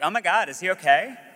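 put-on New Jersey girl accent, high pitch. Retelling what a student said on seeing him collapsed, Jersey girl accent. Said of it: "she said it was a Jersey girl accent".

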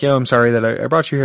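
plain

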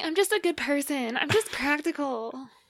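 very high-pitched character voice. Discussing characters they disliked, doing a Kathy voice. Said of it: "That's my Kathy voice".

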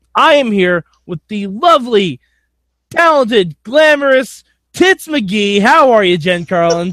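self-important newscaster voice. Introducing co-host Jen on the show, reading it in a Ron Burgundy voice. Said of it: "I just read it like Ron Burgundy would".

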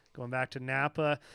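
ordinary delivery

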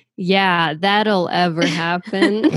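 ironic, dry, sarcastic delivery. Reading a puzzle clue aloud in a sarcastic tone. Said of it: "I did say that with like a sarcastic tone".

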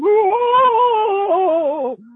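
put-on impression voice with a keening wail.

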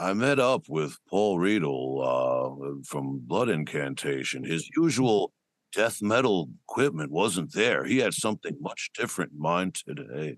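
low, stretched-out, drawling hipster voice. Imagining how a hipster guy would narrate, in a drawling hipster voice. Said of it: "some like kind of like drawl, like guy".

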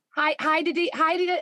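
high mock Australian accent.

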